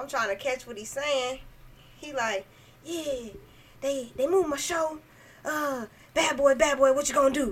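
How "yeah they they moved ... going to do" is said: put-on old man voice, talking fast. Retelling a call-center call from an old man: imitating an old man talking fast. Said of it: "he talking all fast".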